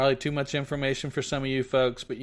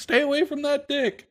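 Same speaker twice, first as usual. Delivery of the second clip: put-on very high, shrill, drunken shrieking scream; 5 dB louder than usual. Retelling how a drunk woman screamed at his date: imitating a drunk woman screaming. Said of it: "She's screaming".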